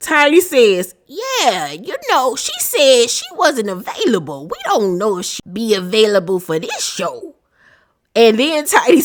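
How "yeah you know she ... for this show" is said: lively, animated put-on character voice with swooping pitch. Retelling a reality show scene, speaking as Tiny: Tiny voice. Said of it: "my Tiny voice".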